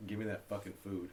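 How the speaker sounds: ordinary talk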